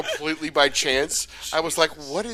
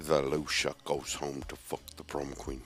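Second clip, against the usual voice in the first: very low, deep, hushed, barely audible mumble; 13 semitones lower, 10 dB quieter than usual. In an impressions game, repeating a line as a terrible Sean Connery impression. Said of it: "That was a terrible Sean Connery".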